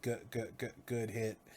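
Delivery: soft, broken, malfunctioning robot voice. Retelling how an opponent spoke after catching a punch: broken robotic voice. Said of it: "speaks in this like broken robotic voice".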